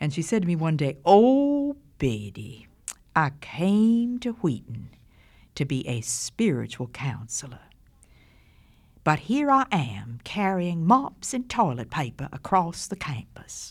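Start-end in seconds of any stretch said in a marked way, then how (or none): 1.0-13.7 put-on woman's voice with Georgia accent. Quoting what Miss Cumming said one day, Miss Cumming's Georgia accent. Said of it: "let me say it the way Miss Cumming said it in her Georgia accent".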